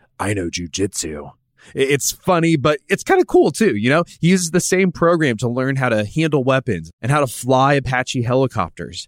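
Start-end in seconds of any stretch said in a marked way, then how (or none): 0.2-1.3 very deep, low movie-hero voice, dropped right down. Retelling the hero's line from a movie: deep Keanu Reeves voice. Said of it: "in his deep Keanu Reeves voice".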